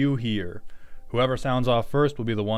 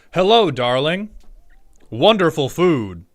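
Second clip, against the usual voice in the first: raised, pitched-up lecture-hall man's voice; 5 semitones higher, 8 dB louder than usual. Showing how he does not talk to his girlfriend, in his lecture man voice. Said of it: "with my lecture man voice".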